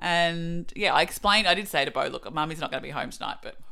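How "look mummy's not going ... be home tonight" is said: ordinary talk, nothing marked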